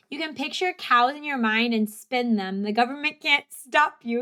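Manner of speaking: plain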